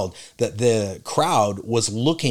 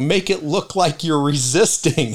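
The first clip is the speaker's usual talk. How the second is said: mock mild half yell, pitched up; 6 semitones higher than usual. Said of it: "he's yelling at me through the crowd".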